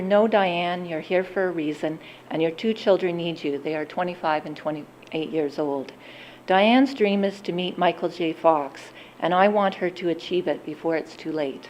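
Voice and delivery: normal talking voice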